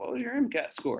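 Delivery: put-on patient, high tone. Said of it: "patients don't look at you and say".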